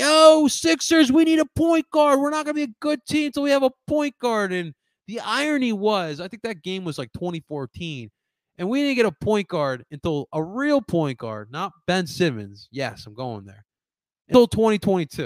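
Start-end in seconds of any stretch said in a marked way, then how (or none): 0.0-4.5 put-on very high, loud, drunken heckling scream. Recalling a drunk fan in the row behind at a game, imitating a drunk fan screaming. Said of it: "he kept screaming at the court".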